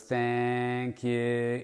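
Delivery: put-on drawn-out, stretched-out delivery. Speaker imitates a woman who says this to every customer; imitating drawn-out words. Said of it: "kind of extending the words".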